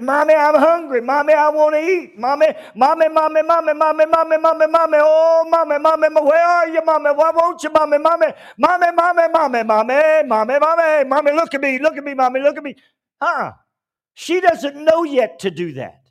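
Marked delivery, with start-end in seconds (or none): 0.0-12.8 put-on little child's repeated pleading call. Acting out a child demanding attention: imitating a child calling for mommy. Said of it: "She doesn't have to stand up and say".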